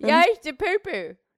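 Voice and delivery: very high, squeaky, attempted Australian accent. Challenged whether that is australian, the speaker repeats it in attempted australian accent. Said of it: "That's Australian?".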